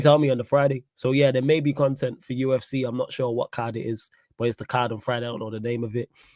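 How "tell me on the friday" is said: plain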